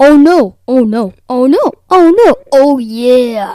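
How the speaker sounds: booming, very loud cartoon-mascot bellow. On a podcast, asked to do a Kool-Aid Man impression, Kool-Aid Man impression. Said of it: "Let me hear your Kool-Aid Man impression".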